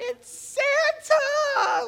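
put-on shrill, very high, thrilled, excited scream. Recalling seeing Santa wave at the crowd, retelling screaming out. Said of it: "I'm like screaming out".

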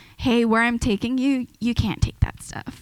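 ordinary talk

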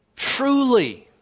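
final "truly" stressed and lifted high. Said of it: "he pushes it all the way to the end of the sentence".

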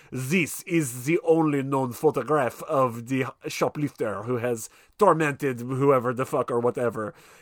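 terrible, bad, put-on French accent. Retelling a film scene, imitating James Coburn's terrible French accent. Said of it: "James Coburn doing a terrible French accent".

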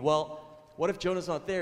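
loud, high, scoffing and mocking. Telling a story about a teacher and a child, imitating a mocking teacher. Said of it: "the teacher says mockingly".

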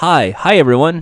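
mock stiff, uneasy, awkward, hesitant tone. Retelling how a game show co-host sat greeting viewers: imitating an awkward greeting. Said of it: "awkward, just sitting there like".

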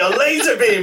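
thrilled, keyed-up, excited, high-pitched delivery. Retelling a movie scene line by line: imitating Kano excitedly. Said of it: "'cause he's so excited".

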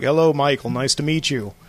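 put-on Austrian-accented voice. Retelling a dream greeting from Donald Trump, in an Arnold Schwarzenegger voice. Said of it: "That sounded more like Arnold Schwarzenegger".

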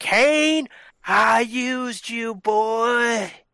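weird, high-pitched, very slow, drawn-out scream. Quoting a famous promo: Paul Bearer weird high-pitched scream. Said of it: "scream in his weird high-pitched voice".

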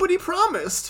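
extremely whiny, very high-pitched voice. Recapping a show, the speaker acts out a character pleading: whiny Yugi impression. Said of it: "the whiniest voice I've heard Yugi use".

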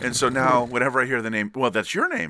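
ordinary delivery

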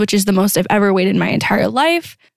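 normal talking voice

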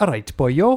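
put-on speaking with Welsh accent. In a role play, speaking as Neville Southall with a Welsh accent. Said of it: "You're quite good on the Welsh accent".

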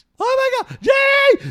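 high, loud, panicked, blood-curdling scream.

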